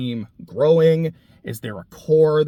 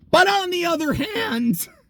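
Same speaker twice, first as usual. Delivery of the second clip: voice breaking, cracking very high. Talking about football coaching, the voice cracking mid-sentence. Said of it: "my voice is like just cracked".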